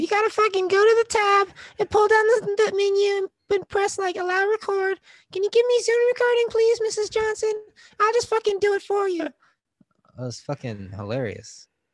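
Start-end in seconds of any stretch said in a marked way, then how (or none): 0.0-9.3 put-on very high voice of a seven-year-old. Speaker recounts a kid in an online class talking to the teacher, imitating a 7-year-old's voice. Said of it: "I'll hear like a 7-year-old voice be like".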